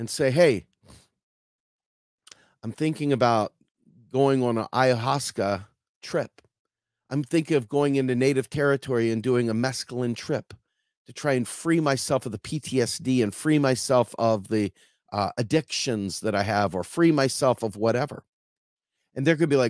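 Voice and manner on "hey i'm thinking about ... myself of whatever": normal talking voice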